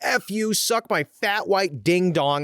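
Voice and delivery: mock hollering, high and all-out loud. Retelling yelling into a drive-thru speaker: imitating yelling at the top of lungs.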